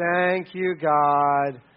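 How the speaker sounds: grudging, forced, reluctant tone, "God" drawn out. Mocking an obligatory thanks before eating, said in a forced, grudging way. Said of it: "This isn't some kind of forced, like".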